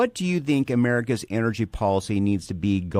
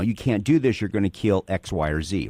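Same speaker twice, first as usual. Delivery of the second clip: ordinary delivery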